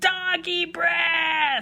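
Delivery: tiny, high, squeaky mouse voice. Narrating a story, the soldiers answer their leader, squeaky mouse voice. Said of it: "They squeaked".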